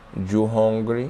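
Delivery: put-on nice, sweet tone in a Spanish accent. Retelling what a woman asked early in the morning: nice sweet Spanish accent. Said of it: "in her nice, sweet Spanish accent".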